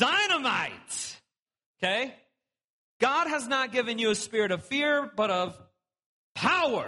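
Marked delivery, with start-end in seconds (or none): 0.0-1.2 enthusiastic, fired-up, excited exclamation. Asking the listeners to say the word excitedly, excited. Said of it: "Say it like excited or something".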